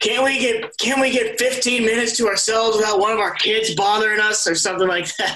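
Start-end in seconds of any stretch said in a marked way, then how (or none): 0.0-4.5 high-pitched griping voice. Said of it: "He goes".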